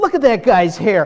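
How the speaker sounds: high, loud, nitpicking critical tone. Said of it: "I'm a critic".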